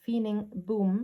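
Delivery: ordinary delivery, nothing marked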